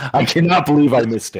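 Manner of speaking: worked-up, really mad, angry tone. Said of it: "I am so mad right now".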